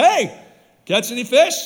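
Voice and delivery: mock sarcastic, knowing tone. Retelling a Bible story, acting out a figure on the shore; retelling a sarcastic question.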